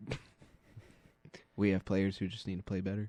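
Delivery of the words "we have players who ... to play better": low, quiet, flat monotone voice.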